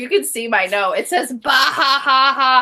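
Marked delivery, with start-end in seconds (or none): 1.3-2.6 acted, very slow, drawn-out big laugh. Reading out the note she wrote while watching a scene: acting out her own laugh. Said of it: "I was laughing so hard".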